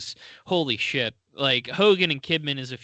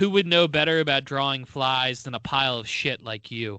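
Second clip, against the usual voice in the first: normal talking voice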